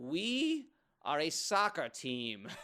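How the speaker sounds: loud, very slow, drawn-out fake German accent. Retelling how he answered a cop, in a fake german accent. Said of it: "He's trying to speak in like a in German accent".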